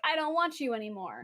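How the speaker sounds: ordinary talk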